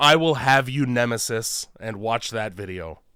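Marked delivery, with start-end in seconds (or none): none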